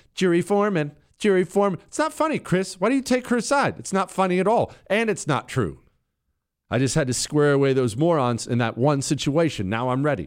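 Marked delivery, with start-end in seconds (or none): 0.1-1.8 put-on petty, snotty little voice, pitched up. Speaker imitating what a woman always says to him, mimicking a snotty little voice. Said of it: "she always says in this snotty little voice".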